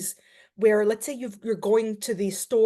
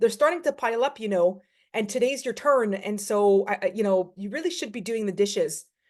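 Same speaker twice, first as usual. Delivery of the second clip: ordinary delivery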